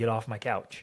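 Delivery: mock good-humoured, no-nonsense, firm but friendly tone. Retelling telling the kids to get off the couch: retelling own firm words, smiling. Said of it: "I'll be smiling at my kids, and I'll be like".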